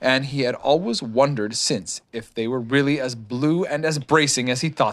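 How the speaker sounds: ordinary delivery, nothing marked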